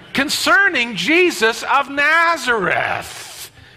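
put-on exasperated, very slow, swooping, "Nazareth" drawn out. Acting out a disciple's reply about Jesus: acting out Cleopas's irritation. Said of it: "the irritation in Cleopas' face and voice".

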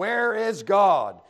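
loud, booming bellow. Narrator reading a clergyman shaking his finger at a boy's face, bellowing. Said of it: "raised his voice even more and shook his finger at the boy's face and bellowed".

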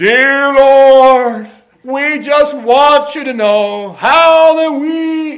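very loud, high, showy, fake pious praying tone. Speaker imitates people who pray wanting to sound spiritual, in a mock-pious prayer voice. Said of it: "people pray who wanted to be sounding spiritual".

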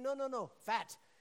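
put-on English with Kenyan accent. Recalling a first trip to Kenya, quote the pastor's reply, mimicking a Kenyan pastor's accent. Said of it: "so I'm mimicking his accent".

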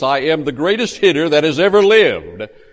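grand, booming, proud, boastful delivery. Narrating a batter announcing before his third swing, in an even louder voice. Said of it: "announce in an even louder voice".

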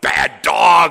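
loud scolding yell. Describing finding a dog that got out of the yard, acting out a yell. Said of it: "you yell at him".

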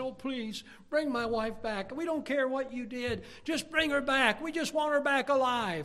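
high, tearful, crying, begging tone. Retelling a husband's plea on the news to bring his wife back: imitating a man crying. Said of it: "he's crying".

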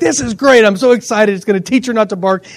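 ordinary talk, nothing marked

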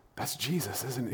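barely audible, secretive, hushed half-whisper. Retelling a man half-whispering so others wouldn't hear, retelling a half-whisper. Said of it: "He was like whispering".

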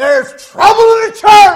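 booming, loud, high-pitched yell. Recounting a church brother's phone call, quoting what he said: retelling a loud yell. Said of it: "The brother called and he yelled".

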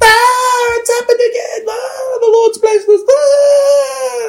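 very high, drawn-out shriek with each Ah stretched. Describing a woman who stood up during preaching, imitating a woman screaming. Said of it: "this woman stands up and screams".

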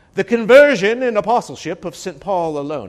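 put-on would-be English accent, high. Quoting the conclusion of an author's book aloud, in an attempted english accent. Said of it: "I can't do an English accent".

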